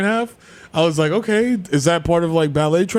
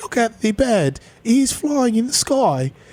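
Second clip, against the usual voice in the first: put-on cartoonish British accent; 7 semitones higher than usual. Speaker switching into a put-on Peppa Pig British accent. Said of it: "it's just Peppa Pig accent".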